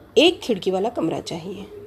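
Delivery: एक stressed, punched with a rising pitch.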